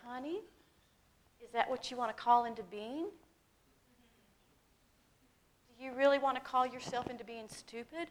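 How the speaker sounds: gentle, soft, sweetest, kindest voice. Retelling what a gentle woman said to the speaker, imitating a sweet, kind voice. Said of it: "in the sweetest kindest way".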